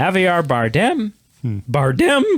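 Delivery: cracking, breaking voice. Speaker reading out a list of actors' names, voice cracking. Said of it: "I don't know why my voice is cracking so much".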